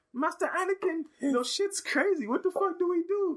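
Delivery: very high-pitched put-on English accent. Retelling a movie scene, speaker voices the kid Jedi with kid Jedi English accent. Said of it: "I got the English accent".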